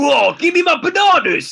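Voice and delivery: very loud, very high, slow bellowing Cockney shout. Joking about a Cockney Mario Kart character: Donkey Kong with a Cockney accent. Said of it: "Donkey Kong would be hilarious".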